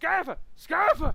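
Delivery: desperate, high, loud yell. Narrating a game scene, the lion calls a player's character over: yelling. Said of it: "just yelling".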